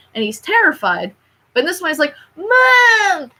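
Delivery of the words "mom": put-on very high childlike voice, "mom" stretched out. Retelling the remake's scene, imitating Simba like a little kid. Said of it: "a little kid".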